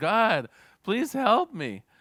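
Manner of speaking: loud, high-pitched yelling. Telling a joke, a man hanging from a cliff calls out, yelling for help. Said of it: "he yells".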